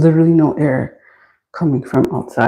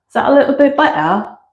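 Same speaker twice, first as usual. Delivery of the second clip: light put-on British accent in a very high voice; 9 semitones higher than usual. Checking whether the camera view is better: little British accent. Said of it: "That's my little British accent".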